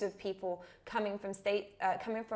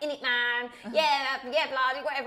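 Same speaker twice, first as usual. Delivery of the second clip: loud, rough London street accent; 4 semitones higher, 8 dB louder than usual. Retelling how the speaker used to talk at a rough London school: imitating own past rough London accent. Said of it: "I used to talk like this".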